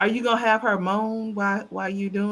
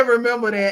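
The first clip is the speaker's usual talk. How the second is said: plain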